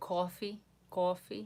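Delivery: New York-accented speech. A speaker from New York, asked what to say, shows their New York accent. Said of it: "I can do my New York accent".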